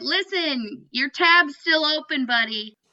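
very slow, high, stretched-out, mild holler. Retelling what they yelled about the scorer's goal tally: retelling own yell. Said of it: "exactly what I yelled".

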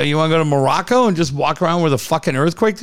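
ordinary talk

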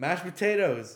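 very loud, high, shouted outburst. Retelling a troll in the crowd yelling during a golf swing: imitating a heckler's yell. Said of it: "and he yells".

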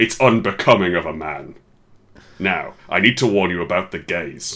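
put-on imposing, monolithic dad voice. Two speakers act out how their dads lectured them as boys: imposing monolithic dad voice. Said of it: "we voice our dads as like this sort of 12-foot-tall monolith".

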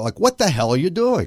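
acted-out panicked freak-out. Retelling the moment a door opened, acting out freaking out. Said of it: "I'm freaking out".

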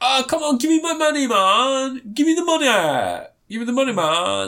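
very high, slow, with man drawn out. Discussing a film, imitating Ben Kingsley's film accent. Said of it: "That's the accent he does".

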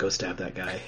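very quiet hushed whisper, barely voiced. Acting out a card telling another player to attack: imitating a whisper. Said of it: "whispering to them".

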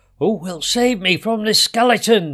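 frightened, high, loud screaming cry. Narrating a frightened king hearing of the skeleton's threat; screamed. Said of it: "he screamed".

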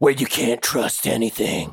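low movie trailer narrator voice. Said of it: "like, movie trailer voice ever".

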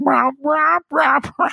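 high, loud puppet-like rah-rah mouth noise. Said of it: "her mouth's like".

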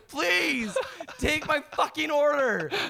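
very high-pitched, desperate, pleading begging voice. Retelling your thoughts while waiting for her to take your order: retelling inner begging. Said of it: "I am begging you at this point".

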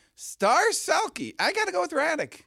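voice jumped up an octave, very high. Speaker repeating their award pick to the others: high-pitched voice. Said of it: "You went up to another octave".

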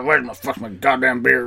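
put-on, mock growling voice. Voicing the man who gave the kid fifteen cents for beer: mock growl. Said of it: "I can growl".

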